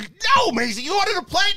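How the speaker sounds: very high, shrill screaming. A dad acts out his eight-year-old daughter and the two-year-old, imitating a girl screaming. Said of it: "she's screaming at".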